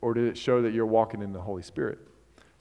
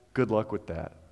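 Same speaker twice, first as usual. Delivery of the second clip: mock arrogant tone, quieter; 6 dB quieter than usual. Quoting a soccer player's closing line from a commercial: imitating an arrogant remark. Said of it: "very arrogantly".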